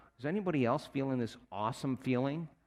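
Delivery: ordinary talk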